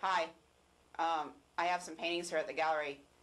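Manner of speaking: flat, choppy, eccentric monotone delivery. Recalling what an eccentric man once said: DL's monotone voice. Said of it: "He kind of talks like that. ... Very monotone voice".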